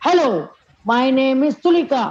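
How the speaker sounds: said in an angry mood. Demonstrating a line in an angry mood for a student to repeat, angry. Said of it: "I am saying it in angry mood".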